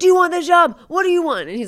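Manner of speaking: mock officer-style yelling. Retelling how he questioned someone about the job, imitating a lieutenant-style yell. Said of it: "He yells at him like a lieutenant".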